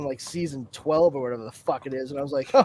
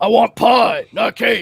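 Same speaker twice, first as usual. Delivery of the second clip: put-on voice, very loud, slow and rough; 5 semitones higher, 8 dB louder than usual. Mocking an actor's put-on show voice: imitating Jensen Ackles' put-on voice. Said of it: "it's very obvious he's putting on a voice on Supernatural".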